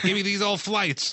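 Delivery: put-on high hollering old-man voice. Joking about who wants old shoes back, imitating an old man yelling. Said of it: "an old man's yelling at the sky".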